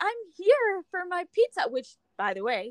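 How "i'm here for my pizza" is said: play-acted bright, upbeat, cheery, chipper, high, hopeful voice. Retelling walking into a pizza shop to pick up an order: retelling a chipper greeting. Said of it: "so chipper".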